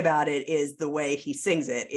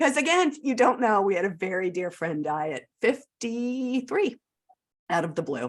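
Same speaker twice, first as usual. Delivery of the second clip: tearful, moved, teary voice with pitch raised; 5 semitones higher than usual. Talking about an album that moved them, the speaker goes on while getting teary. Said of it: "now I'm getting teary".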